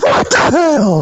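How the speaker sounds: mock outraged yelp, high and slow.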